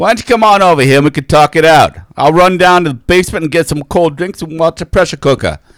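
would-be put-on Boston accent. Taking a turn at the accent bit, inviting someone over, attempted Boston accent. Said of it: "you're not doing a Boston accent".

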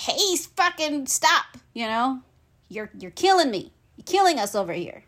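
talking plant voice. Voicing plants complaining to people: voicing the plants. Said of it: "the plants are like".

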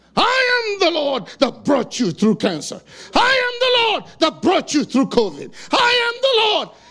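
put-on scream, high pitch. Recounting lying down to pray when God would not let him speak: imitating God screaming. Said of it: "he started screaming at me".

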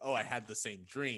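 ordinary delivery

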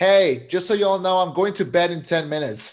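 mock loud, announcing yell, calling out broadly. Retelling a comedian's joke about a party: imitating someone yelling. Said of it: "she'll just yell".

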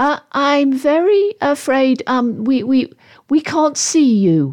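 timid. Narrator voicing a girl trying to calm a tense exchange, meek. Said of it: "Katie chipped in meekly".

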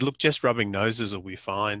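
plain

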